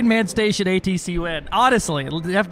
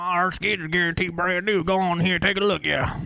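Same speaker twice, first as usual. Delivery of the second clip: mock put-on country accent; 4 dB quieter than usual. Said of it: "a British lady with a fake and a country accent".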